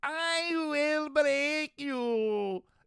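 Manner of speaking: very high, slow helium villain squeak, you stretched out. Wondering how the villain would sound after sucking in helium, the speaker does Bane on helium. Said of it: "What would Bane sound like if he sucked in helium?".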